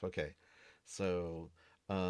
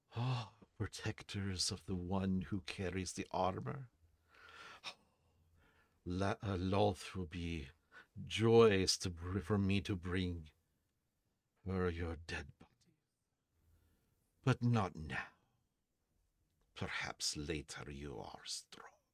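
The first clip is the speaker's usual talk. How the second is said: half-whispered in an ancient elven tongue; 4 dB quieter than usual. A game master voices a voice behind the players: ancient elven half-whisper. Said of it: "it kind of a whisper in an elven".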